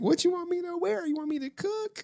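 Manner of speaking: very high, flirty, suggestive delivery. Retelling what Pyra Bell wrote in the chat: imitating freaky flirty talk. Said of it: "Pyra Bell was talking all freaky in the chat".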